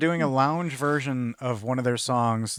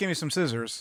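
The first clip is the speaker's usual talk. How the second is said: plain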